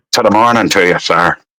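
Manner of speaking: put-on Irish accent. Showing how they practice the accent when no one listens, in a fake Irish accent. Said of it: "I sound Irish".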